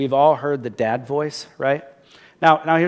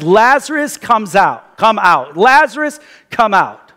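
big, loud, thunderous, commanding dad voice; 6 semitones higher, 7 dB louder than usual. Preaching, retelling the call to a dead man to come out, loud and thunderous. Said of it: "he just says this so loud and so thunderous".

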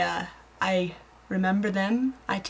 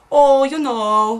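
booming, very loud Minnesota accent; 5 semitones higher, 11 dB louder than usual. Trying an Irish accent that comes out Minnesotan instead: Minnesotan accent. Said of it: "I've got an Irish accent stuck in my head. Like, ... No, that's Minnesotan".

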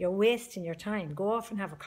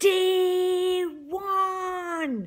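loud, very high, shrill scream, one word stretched; 12 semitones higher, 8 dB louder than usual. Speaker recalling the moment they screamed too during a cereal fight: retelling a scream. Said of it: "And I began to scream too".

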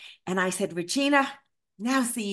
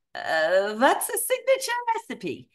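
very bad put-on Eastern European accent, swooping high; 5 semitones higher than usual. Retelling what Regina said to the speaker, in a bad Eastern European accent. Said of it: "the absolute worst Eastern European accent".

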